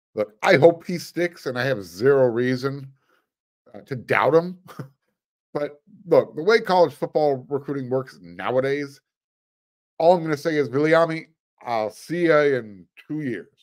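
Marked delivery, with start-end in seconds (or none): 10.6-13.4 sarcastic tone. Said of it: "a little bit of sarcasm there".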